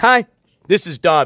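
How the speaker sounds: feeble, weak little dog voice. Recalling how they voiced Dobby saying hi, voicing Dobby as a weak dog. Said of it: "like a little weak dog".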